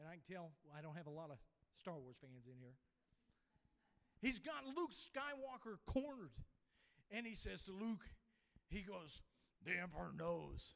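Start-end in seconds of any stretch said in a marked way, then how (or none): 9.6-10.8 poorly done villain voice, low, deep and raspy. Retelling a movie scene where Darth Vader corners Luke: poor Darth Vader imitation. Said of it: "This is a poor imitation".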